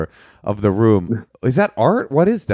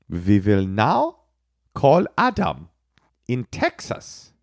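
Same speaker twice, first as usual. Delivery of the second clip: slow, jokey, put-on German accent; 3 dB quieter than usual. Announcing who is called next: put-on german accent. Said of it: "That's my German accent".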